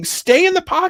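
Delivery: very high, loud screaming yell. Retelling yelling at a quarterback on TV: imitating own yelling. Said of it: "I'm screaming at him like I'm watching".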